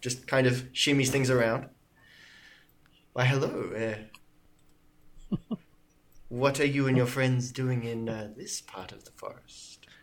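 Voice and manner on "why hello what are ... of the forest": flirtatious, much lower. Game master voicing a woman who greets the adventurers, flirtatious. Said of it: "She hits you with the eye".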